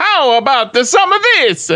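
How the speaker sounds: slow, drawn-out put-on Italian accent. Asked to do an Italian one, speaking in a put-on Italian accent. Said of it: "You want me to do an Italian one?".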